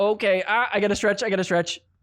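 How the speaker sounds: voice of a cramping athlete. Retelling a player stretching her cramping hand: imitating a cramping player. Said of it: "and she's like".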